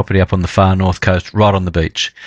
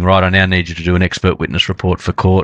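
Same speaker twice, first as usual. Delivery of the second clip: usual speaking voice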